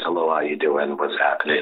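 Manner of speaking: fake, very low, deep man's voice. Offering to do a different voice mid-conversation, put-on deep man voice. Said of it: "I can do my deep man voice".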